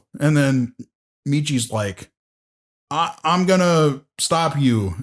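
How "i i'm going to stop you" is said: put-on defeated voice. Retelling a scene where Michi answers a villain: Michi sounding defeated. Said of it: "he sounds just so fucking defeated".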